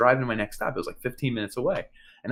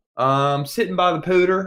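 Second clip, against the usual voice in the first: fake Southern US accent, pitched up; 7 semitones higher, 6 dB louder than usual. Retelling a call with a fake tech support guy, in a put-on southern accent. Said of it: "I pretended I had a southern accent".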